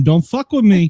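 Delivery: put-on New York accent. Asked to do a voice, the speaker shows off a put-on New York accent. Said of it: "I can put my New York on".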